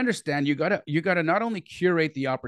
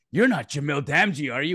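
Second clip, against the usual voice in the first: put-on British accent. Acting out somebody asking a man who he is, in a fake british accent. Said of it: "With a fake British accent".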